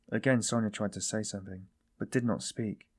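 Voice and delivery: plain reading voice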